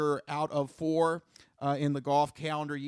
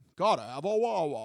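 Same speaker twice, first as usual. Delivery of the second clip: slow, exaggerated, thickly laid-on British accent. Pitching a voiceover for a wawa ad, saying it in an overly british accent. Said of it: "so you can just have that overly British".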